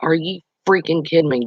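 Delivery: ordinary delivery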